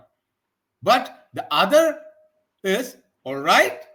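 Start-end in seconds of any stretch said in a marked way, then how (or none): 3.2-3.7 louder, rising tone on "right". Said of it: "It should be rising tone".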